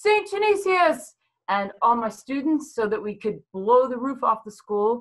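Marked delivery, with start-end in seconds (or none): 0.0-1.1 put-on, very high, screamed-out call. A teacher recalls starting a tradition with students: retelling a scream. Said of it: "And then I screamed out".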